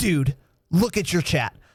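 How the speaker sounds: mock very serious, grave, urgent tone. Speaker retells Tanner shouting at them during Warzone, imitating Tanner's very serious voice. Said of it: "the most serious voice I've ever heard Tanner use".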